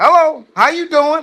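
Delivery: sweet, nice, polite voice. Retelling how a crying woman answers her work phone, imitating a nice phone greeting. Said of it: "but you talking to people nicely".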